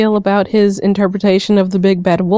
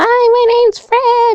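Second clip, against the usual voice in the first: very high, drawn-out, slow squeal. Imitating a YouTube creator the group mocks: screaming high-pitched Fred voice. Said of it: "always screaming with the super high-pitched chipmunk voice".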